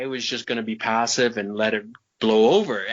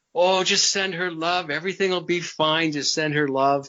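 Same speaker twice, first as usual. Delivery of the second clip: mock jovial, easygoing, pitched-up cheer; 5 semitones higher than usual. Retelling what the master said on the phone: imitating a jovial tone. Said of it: "he's all jovial".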